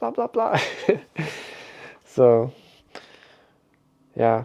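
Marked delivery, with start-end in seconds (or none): 0.0-0.6 mild put-on yelling, high. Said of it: "seeing a guy in the car yelling at his phone".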